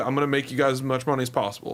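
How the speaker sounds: normal talking voice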